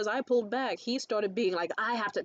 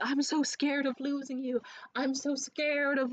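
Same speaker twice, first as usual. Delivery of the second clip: mock sobbing, higher; 4 semitones higher than usual. Retelling a partner crying in front of the fireplace: imitating someone sobbing. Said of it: "full on sobbing".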